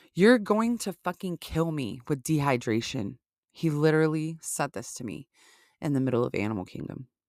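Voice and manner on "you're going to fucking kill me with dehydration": usual speaking voice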